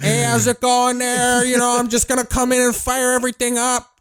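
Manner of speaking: loud, very high-pitched holler in Midwestern accent. Describing how Midwesterners talk, the speaker imitates one: loud Midwestern accent. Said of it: "it's fucking loud".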